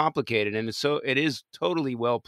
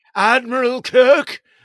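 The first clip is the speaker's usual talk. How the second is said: put-on villain shout, much higher and louder; 11 semitones higher, 10 dB louder than usual. Trying a Christopher Lloyd impression that comes out as a Khan-style villain shout. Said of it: "That's a little bit too Khan".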